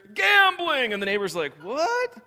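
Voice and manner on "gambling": shrill, sudden, very high, loud yell. Telling of neighbors walking by open windows: yelled 'gambling'. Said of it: "I just yelled them all anyway".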